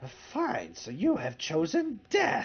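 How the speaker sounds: put-on strange crooked old man voice, swooping pitch. A game master voices a strange old man confronting the players; strange old man character voice. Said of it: "what looks like a very strange old man".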